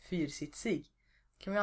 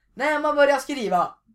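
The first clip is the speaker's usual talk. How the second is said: mock shouting, much higher and louder; 10 semitones higher, 16 dB louder than usual. Retelling how a teacher asked a question, then yelled the answer; imitating a teacher shouting. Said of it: "då skrek han ut svaret".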